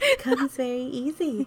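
put-on syrupy sweetness. Repeating another speaker's words back to her, imitating a sweet tone. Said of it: "as she says in the sweetest tone ever".

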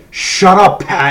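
sudden, loud, high-pitched shouted yell. Telling how a man suddenly yelled at pat and changed the room's vibe, retelling a yell. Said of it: "He just yells".

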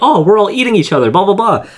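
put-on excited, very high, rapid rush of words. Recapping an episode's dream scene, speaker mimics the character in a mock-excited voice. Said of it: "she's like in her excited voice like".

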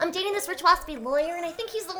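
put-on sweet girly high voice. Asked to give a little Charlotte, the speaker does a Charlotte impression. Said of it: "Give me a little Charlotte".

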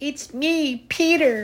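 feeble, weak, very high-pitched squeak. A boy shut inside a locker answers the bullies, weak squeaky voice. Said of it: "a weak voice squeaked from inside the locker".

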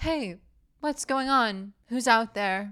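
words drawn out slowly. Retelling a movie scene, acting out the character's line: imitating Sydney's delivery. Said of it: "and with that delivery".

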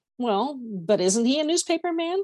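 doubtful, unconvinced, uncertain questioning tone. A girl questions what another girl has just told her, asking doubtfully. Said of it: "Penny asked doubtfully".

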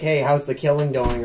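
put-on sarcastic, brash tone. Quoting a man who teases them while they play violent games, mock-sarcastic jab. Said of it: "Just makes some really sarcastic and brash comment".

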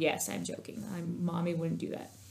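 soft, hushed, reassuring voice.

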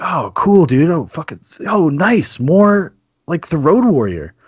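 put-on thrilled, high, swooping, super-excited gush. Recalling finding Mad Max at the library as a teen: acting out super-excited reaction. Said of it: "I was like super excited".

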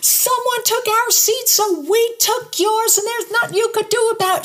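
mock ranting, yelled at a very high pitch. Retelling what a woman in their seats said: imitating a woman yelling. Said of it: "She starts yelling at me".

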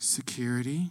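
put-on small, quiet, hushed childlike voice. Retelling a woman's answer to a paramedic's question, in a really quiet childlike voice. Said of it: "in a really quiet, like childlike voice".

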